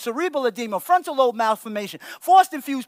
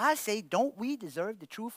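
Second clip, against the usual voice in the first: ordinary delivery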